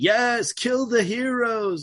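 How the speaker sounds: very high-pitched, slow, drawn-out yell. Retelling a cheesy villain line yelled at henchmen: imitating Arnold Schwarzenegger yelling. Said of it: "when he's yelling at his henchmen".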